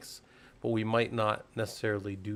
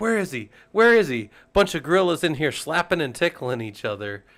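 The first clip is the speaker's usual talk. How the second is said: very loud, shrill, high-pitched yelling; 6 semitones higher, 11 dB louder than usual. Retelling a movie scene where a wife comes in: imitating a woman yelling.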